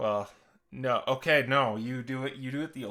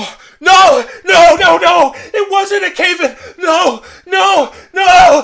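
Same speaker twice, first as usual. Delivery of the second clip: shrill, very high, full-volume, drawn-out panicked screams; 22 dB louder than usual. Narrating a scene, voicing Gus as his eyes widen: Gus screaming in panic. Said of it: "he begins screaming".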